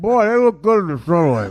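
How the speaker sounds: put-on voice, speaking through a mouthful of food. Retelling what he said aloud on the way to his mom's, imitating talking with mouth full. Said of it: "with a full mouth of Mucino".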